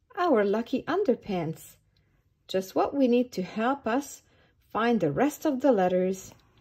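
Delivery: ordinary delivery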